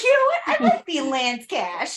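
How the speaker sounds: put-on imitated Boston accent. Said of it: "with the Boston accent".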